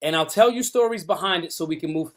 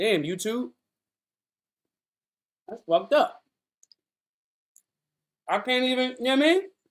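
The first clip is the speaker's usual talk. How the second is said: talking while chewing, much higher pitch; 5 semitones higher than usual. Returning to the recording with food in mouth, talking while chewing. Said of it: "let me stop chewing".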